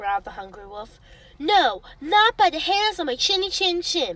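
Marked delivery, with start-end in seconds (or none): 1.4-4.2 shrill, high, loud squealing voice. A little pig hiding inside answers the wolf at the door, squealed. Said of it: "squealed the first little pig".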